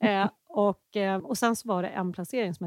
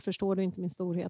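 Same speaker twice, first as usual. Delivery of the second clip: normal talking voice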